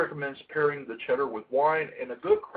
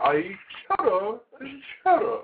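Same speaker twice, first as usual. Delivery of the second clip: clumsy, pitched-up, bad put-on British accent; 8 semitones higher than usual. Quoting an old Wendy's commercial about cheese: bad British accent, Wendy's commercial. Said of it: "I don't do a very good British accent".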